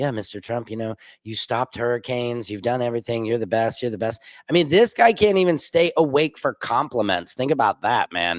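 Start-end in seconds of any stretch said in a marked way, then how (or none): 0.0-4.2 low, flat, lifeless droning monotone. Retelling flattery from meetings where people fell asleep: imitating a monotone flatterer. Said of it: "'cause it's all monotone".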